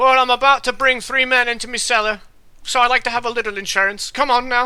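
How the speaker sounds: dialect voice, "my" said "me". Voicing Agatha, who throws an axe over her shoulder: Agatha with "me cellar" dialect. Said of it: "and she's like".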